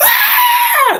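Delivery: high, loud scream of pain. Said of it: "He's like".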